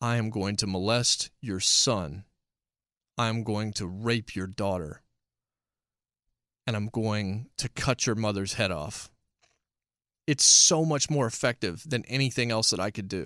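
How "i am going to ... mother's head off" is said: calm measured tone, slower. Making a point about pro wrestling with an example threat, calm measured tone. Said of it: "saying something just abhorrent at a measured tone".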